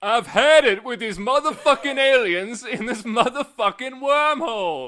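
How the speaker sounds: very loud, high, slow, drawn-out bellowing yell. Asked for an impression in a game: Samuel Jackson as Nick Fury. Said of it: "do an impression of, uh, Samuel Jackson playing Nick Fury".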